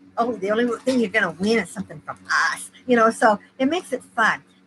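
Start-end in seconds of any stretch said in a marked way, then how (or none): 0.2-2.7 sneering, scornful, disdainful tone. Quoting a line while describing a giveaway: imitating a disdainful tone. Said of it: "You said that with such disdain".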